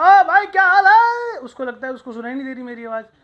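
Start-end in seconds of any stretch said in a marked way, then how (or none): 0.0-1.4 very loud, very high, very slow, drawn-out yell. Imitating someone who always talks by shouting: shouted greeting. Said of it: "वो चिल्ला के बात करते".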